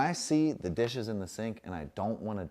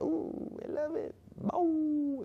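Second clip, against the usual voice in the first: dog voice, very high-pitched and very slow. Voicing the dog who just arrived: voicing Betty the dog.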